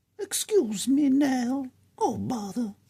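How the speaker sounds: pitched way up, loud and sing-song. Re-recording a voice line after deleting the first take; Pooh Bear voice. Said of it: "We're just going to go with the Pooh Bear voice".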